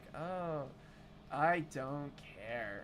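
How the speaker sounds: soft, level, toneless monotone. Describing a game character as very monotone, imitating him in a flat monotone. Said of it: "Um very monotoned".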